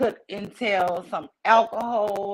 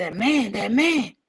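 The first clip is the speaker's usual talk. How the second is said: put-on out-of-breath voice, gasping for air. Retelling answering a dad after running home, imitating being out of breath. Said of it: "trying to catch my breath".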